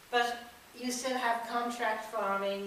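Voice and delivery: ordinary delivery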